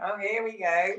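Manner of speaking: mock easygoing calm, slow, with laughter. Retelling how a calm friend reacted to an excited horse: imitating a friend laughing. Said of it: "she's just laughing, going".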